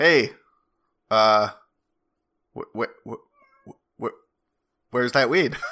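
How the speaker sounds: very slow, stammering, stuttering robotic voice. Voicing a robot heard in the distance as the players leave: robot voice. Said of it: "the robot, you can sort of hear it in the distance".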